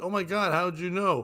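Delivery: ordinary talk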